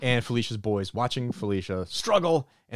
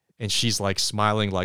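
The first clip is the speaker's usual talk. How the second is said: ordinary talk, nothing marked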